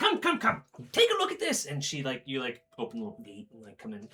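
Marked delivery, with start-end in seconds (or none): 0.0-1.6 very high, loud witchy voice. Retelling a woman inviting them in through her little gate, in a witch-like voice. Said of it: "very witch-like".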